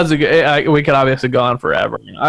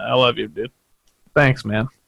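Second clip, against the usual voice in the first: emotional and moved, quieter, lower; 3 semitones lower, 5 dB quieter than usual. Thanking the person he can't wait to hang out with again, getting emotional. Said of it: "I'm already getting emotional".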